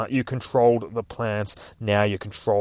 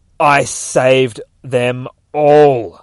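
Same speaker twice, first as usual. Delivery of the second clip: loud scream, very slow and drawn out; 3 semitones higher, 8 dB louder than usual. Narrating a scene where Superman answers Batman, screaming in Ivy's voice. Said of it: "Superman screams through the voice of Ivy".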